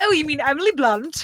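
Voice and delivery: put-on high, thoroughly English accent. Teasing a friend about saying a name, in [name]'s English accent. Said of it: "[name] speaking an English, English accent".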